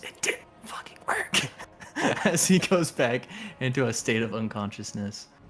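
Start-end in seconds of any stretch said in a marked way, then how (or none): 0.0-2.3 slow, drawn-out whisper under the breath. A game narrator voices a man slipping back into unconsciousness: whispering. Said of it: "He whispers".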